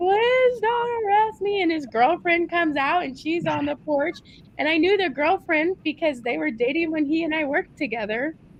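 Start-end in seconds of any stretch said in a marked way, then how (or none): 0.0-1.6 high, slow, sobbing through tears. Retelling how a coworker on a tv show pleaded with police: imitating someone crying. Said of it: "he's just crying to the cops".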